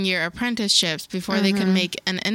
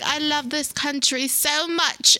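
put-on good, convincing English accent with pitch lifted; 7 semitones higher than usual. Retelling a prime minister's resignation speech: Theresa May accent. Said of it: "you have a good accent".

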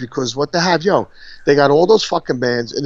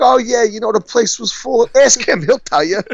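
bad, heavy New York accent, pitched up; 8 semitones higher than usual. You are acting out a politician's answer that left Chris Christie dumbfounded, in a very New York accent. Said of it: "That was so New York".

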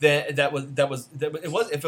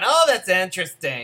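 mock-condescending, snooty put-on voice; 5 semitones higher, 6 dB louder than usual. Recapping a movie, mocking a mom character's remark: mock-condescending. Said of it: "Her and her Donna Mills hair going".

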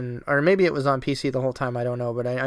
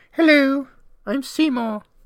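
squeaky, very high, loud, mocking villain voice; 13 semitones higher, 5 dB louder than usual. Speaker mocks a game villain he hated: mocking high-pitched Seymour voice. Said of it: "I have a high voice".

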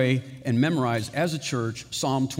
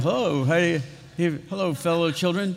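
adult putting on a fake child voice; 4 semitones higher than usual. Announcing a camp, acting out adults pretending to be kids at school. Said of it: "pretending to be, like, kids in the school".

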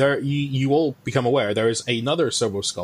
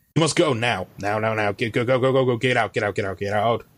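heavily synthesized, electronically processed robotic voice. Something flies to the middle of the group and orders them out, heavily synthesized voice. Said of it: "a heavily synthesized voice comes out of it".

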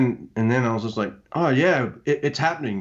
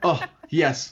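put-on excited, gushing stammer, higher pitch; 4 semitones higher than usual. Acting out own usual reaction: imitating own gushing stutter. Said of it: "my gush stutter, where I'm just like".

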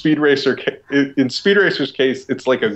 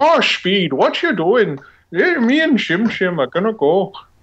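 put-on old-time 1940s Irish accent; 9 semitones higher than usual. Describing how a kid talks, imitating an old-time 1940s Irish accent. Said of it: "sounds like he's like an Irish guy from the 40s".

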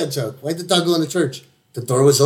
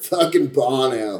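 put-on stoner voice, pitched lower; 2 semitones lower than usual. Showing another speaker how to say Bono's name, in a stoner voice. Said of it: "Gotta say it like a stoner".

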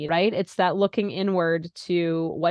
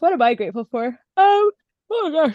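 talking through a yawn, pitched up; 9 semitones higher, 7 dB louder than usual. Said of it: "excuse me, as I'm yawning".

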